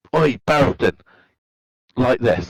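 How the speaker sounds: high, light call-out. Declaring an in-character action during a game turn: shouting. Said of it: "I'm shouting".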